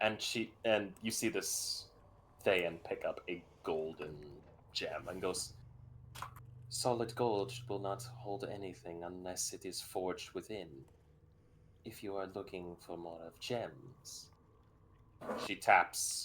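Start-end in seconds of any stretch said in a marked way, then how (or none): 6.7-14.3 distinctly feminine, ladylike character voice. Voicing a Thayan character picking up a golden gem: feminine voice. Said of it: "the voice is coming out very feminine".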